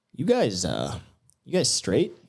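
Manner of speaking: mumbled aside, stopping and restarting. Retelling how the drink vendor quietly asked them something: imitating someone muttering under his breath. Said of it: "under his breath".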